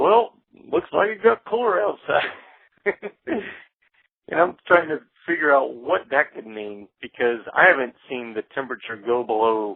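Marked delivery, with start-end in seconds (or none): 0.0-2.3 put-on small, very high voice with rural country accent. Retelling what the little guy who owned the place said coming in: little country accent. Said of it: "his little country accent".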